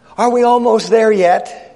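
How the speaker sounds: put-on high, small little child's voice. Retelling a child asking from the back seat on a long trip, little child's voice. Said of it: "this little voice that comes from the back seat".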